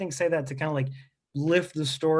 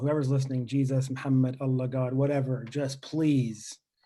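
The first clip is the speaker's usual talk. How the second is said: put-on desperate pleading tone, lower; 4 semitones lower than usual. Retelling praying not to be picked for skins: imitating a desperate prayer. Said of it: "I'm praying".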